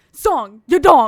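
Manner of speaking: very loud, forceful, aggressive in-your-face yelling. Imitating how some people talk, forceful and aggressive: imitating forceful aggressive talking. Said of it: "forceful and aggressive when they talk".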